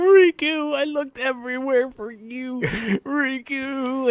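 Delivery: put-on very slow, high, drawn-out tearful blubbering. Retelling a game scene where a character drops to his knees: imitating someone crying. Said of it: "drops to his knees crying".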